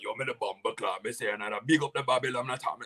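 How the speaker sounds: full yardie Jamaican accent. Showing how a typical yardie talks: imitating a typical yardie accent. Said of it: "talk like a, a typical yardie".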